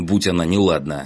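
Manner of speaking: ordinary delivery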